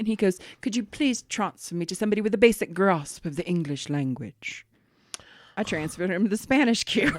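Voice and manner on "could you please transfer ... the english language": British-accented voice, acted. Retelling a call from a British caller, imitating a British caller. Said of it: "He was British".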